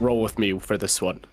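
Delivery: whispering. Whispering in character to an ally lying on the ground: whisper. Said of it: "I whisper to Thalman".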